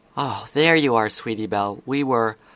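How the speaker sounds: ordinary delivery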